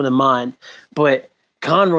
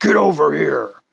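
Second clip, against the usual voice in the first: barked, put-on ninja character voice. Quoting Batman's line: Scorpion voice. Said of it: "he's fucking Scorpion over there".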